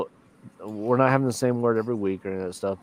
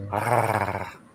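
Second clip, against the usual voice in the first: gargling, gurgling creature noise. Podcaster who can't roll R's attempts a Chewbacca gargle noise. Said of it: "that's a Chewbacca gargle".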